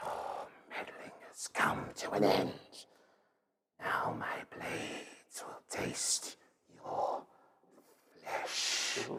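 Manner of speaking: very quiet, breathy whispered serpent voice. Narrator voicing an unseen serpent figure as the players rush back, serpent creature voice. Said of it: "you hear that voice again".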